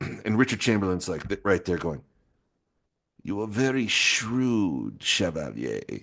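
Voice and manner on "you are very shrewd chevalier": "shrewd" drawn out, every syllable sounded properly. Act out Richard Chamberlain answering the Chevalier, Richard Chamberlain voice, every syllable pronounced properly. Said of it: "every syllable is like pronounced pronounced properly".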